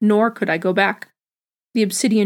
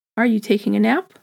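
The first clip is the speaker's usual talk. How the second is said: whispered sarcastically, mocking. Narrator voices someone calling from the distance to a resting person, sarcastic whisper. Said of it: "a sarcastic voice, whispering".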